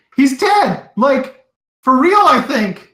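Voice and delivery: high, loud frantic outburst. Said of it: "he's like".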